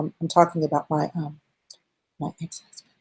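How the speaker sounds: whispered voice. Retelling what someone said while leaning forward: imitating someone whispering. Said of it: "And she whispered it".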